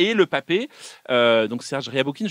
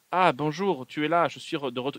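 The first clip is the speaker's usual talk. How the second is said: slow, awkward, embarrassed, self-conscious, uncomfortable line reading; 2 semitones higher, 4 dB quieter than usual. Mocking an actor's line as a mafioso: imitating Fred Testo's embarrassed line delivery. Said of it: "vraiment est gêné de toutes les répliques qu'il dit".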